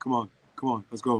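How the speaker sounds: low, flat, level, dull and bored drone. Talking about Shaq being a big character, Shaq's boring voice. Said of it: "he's got that boring voice, like".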